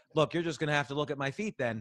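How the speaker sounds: ordinary delivery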